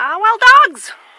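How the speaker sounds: very excited, very high-pitched and loud outburst. Spotting wild dogs after searching for them: very excited. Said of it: "I'm very excited again".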